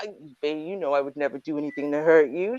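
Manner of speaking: fake smooth low male voice. Acting out a man sweet-talking a woman: imitating a man's smooth extra-bass voice. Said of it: "He puts a little extra bass in his voice".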